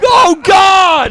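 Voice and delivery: very high-pitched, loud, shrieking screamed outburst. Retelling a prank where someone jumped out at Ryan: imitating Ryan screaming. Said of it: "he just screams".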